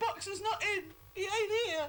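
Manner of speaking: ordinary delivery, nothing marked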